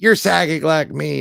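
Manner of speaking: put-on thick Arkansas accent. Retelling what a woman told the speaker, in her thick Arkansas accent. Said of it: "in her thick Arkansas accent".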